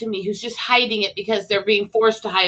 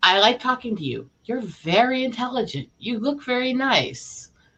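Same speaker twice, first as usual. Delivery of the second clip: slow, pitched-up, overdone sarcastic sincerity; 5 semitones higher than usual. Testing sarcasm on another speaker with compliments: sarcastic. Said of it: "Let me test my sarcasm on you".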